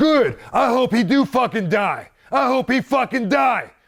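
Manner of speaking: very high, loud, drawn-out, acted-out screamed outburst. Retelling a wrestler coming backstage screaming: imitating someone screaming. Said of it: "and he's screaming".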